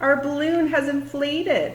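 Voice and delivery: thrilled, bright, excited delivery, high and loud. Demonstrating a baking soda balloon experiment, announcing the result, excited. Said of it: "(excited voice)".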